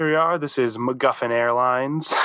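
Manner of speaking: ordinary talk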